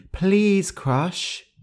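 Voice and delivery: high, soft half-whisper, close in. Reading a fable aloud, the mouse speaks into the lion's ear, half-whispered. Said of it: "Gentle whispered into his ear".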